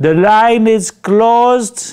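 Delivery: very slow, high, very poor broken English. Speaker retelling what a store manager told them, imitating very poor English. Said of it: "in very poor English".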